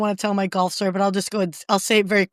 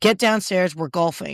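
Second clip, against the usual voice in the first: ordinary talk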